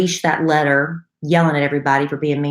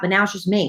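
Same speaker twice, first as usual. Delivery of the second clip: plain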